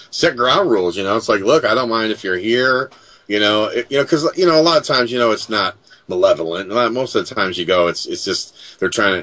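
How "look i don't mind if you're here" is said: usual speaking voice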